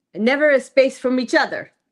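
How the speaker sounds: bad put-on broken-English voice. Asked to do the voice, the speaker attempts a bad broken-english accent. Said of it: "it's broken English".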